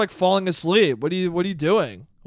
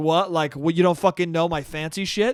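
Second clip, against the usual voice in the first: put-on angry, annoyed reaction. Retelling a woman's reaction when he did not know her restaurant: imitating someone pissed off. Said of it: "I could see she's pissed off".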